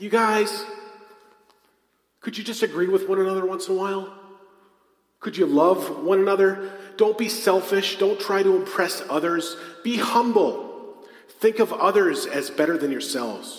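fed-up, upset scolding voice of a teacher. Reading a passage his own way, as a fifth-grade teacher upset with whiny little kids. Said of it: "like a fifth grade teacher upset with whiny little kids".

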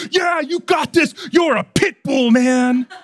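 very high-pitched, loud, excited hype shout. Retelling a man at the gym shouting at him after his set; retelling a shout. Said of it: "he shouted at me".

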